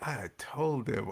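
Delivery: put-on muttering under breath. Acting out being annoyed on camera: imitating muttering under breath. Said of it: "Under your breath".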